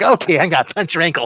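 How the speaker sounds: tiny, small, evil little voice. Imagining a little evil Ted that can hurt you: tiny evil Ted voice. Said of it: "You do the voice good".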